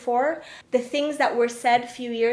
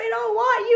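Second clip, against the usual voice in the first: put-on screaming, higher pitch; 11 semitones higher, 4 dB louder than usual. Retelling what a casting director yelled at her: imitating someone screaming. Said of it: "She was screaming at me".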